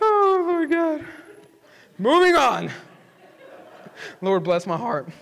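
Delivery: high, drawn-out exclamation spoken through laughter. Unable to read a note written at 3 a.m., can't stop laughing. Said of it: "I got to stop laughing".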